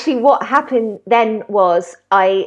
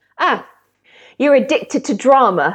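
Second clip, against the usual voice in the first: put-on stern, blunt, no-nonsense tone; 2 semitones higher than usual. Recounting what a woman once told them, the speaker imitates her blunt remark. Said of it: "really bluntly".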